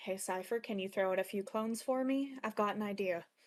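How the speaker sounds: under one's breath. Speaking in character to cypher, asking for clones: under one's breath. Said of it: "under my breath".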